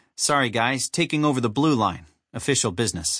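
plain reading voice

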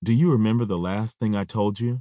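ordinary delivery

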